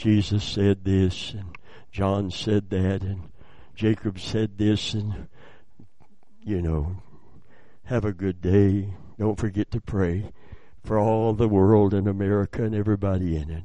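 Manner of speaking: very low, flat droning monotone. Speaker imitates the Bible studies people are used to, mock monotone Bible study delivery. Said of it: "When we're used to a monotone Bible study".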